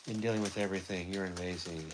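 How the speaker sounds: ordinary talk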